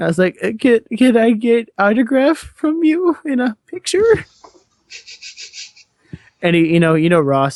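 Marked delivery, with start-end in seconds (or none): 0.4-4.2 very high, slow, faltering, starstruck blubbering. Retelling asking for an autograph: imitating own blubbering. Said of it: "trying not to sound like a blubbering idiot, but I did".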